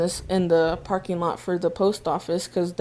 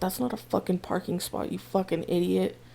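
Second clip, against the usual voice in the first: mock mutter under breath, much quieter; 9 dB quieter than usual. Retelling what a man said under his breath near Dad, imitating a mutter under breath. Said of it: "he's like under his breath like".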